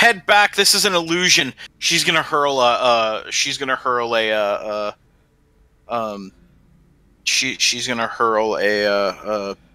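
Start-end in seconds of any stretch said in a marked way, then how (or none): 0.0-1.5 raised, loud, called-out shout. Voicing a character warning the others to turn back: shouting back to others. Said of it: "she's just gonna shout back to the others".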